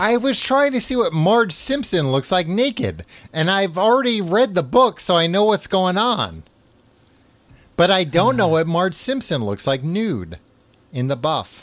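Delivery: very high, way too loud yelling. Co-host confesses to browsing online mid-conversation, yelling too loud. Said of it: "I'm yelling way too loud".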